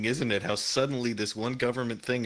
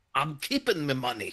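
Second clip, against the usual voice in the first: Scottish accent in cartoon duck voice style; 3 semitones higher than usual. Answering a request for a Scottish Scrooge McDuck voice: Scottish Scrooge McDuck voice. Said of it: "Give him a Scottish Scrooge McDuck voice".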